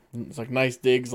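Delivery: ordinary delivery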